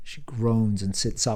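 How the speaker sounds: ordinary delivery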